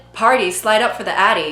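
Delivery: ordinary delivery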